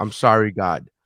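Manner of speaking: put-on tearful, crying voice. Retelling being sick in bed and apologizing: retelling own crying plea. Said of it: "crying in my bed saying".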